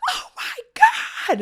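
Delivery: sudden, loud, startled yelp of fright. Retelling being startled by a man waiting for the elevator: retelling a scream. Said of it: "screamed at him".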